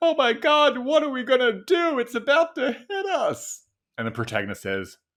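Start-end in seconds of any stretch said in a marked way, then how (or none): 0.0-3.6 shrill, very loud, very high, panicked, distressed scream. Acting out a bad sci-fi trailer scene: screaming in distress. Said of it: "a screaming person in distress".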